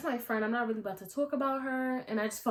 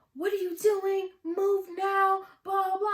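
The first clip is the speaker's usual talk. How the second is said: shrill, very high, loud yelling; 10 semitones higher, 6 dB louder than usual. Retelling a woman yelling at someone early in the morning, imitating someone yelling. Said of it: "she's yelling at Julie".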